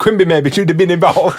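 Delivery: high-pitched, laughing put-on voice.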